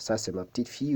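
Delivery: plain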